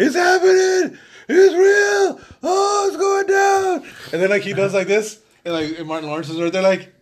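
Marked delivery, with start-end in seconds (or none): 0.0-3.9 very high, loud, very slow, excited drawn-out scream. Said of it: "first it's just him screaming".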